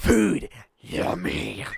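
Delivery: loud, rasping, creaky, rough put-on monster voice. Voicing the mimic as it moves toward a man: mimic monster voice. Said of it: "It's like".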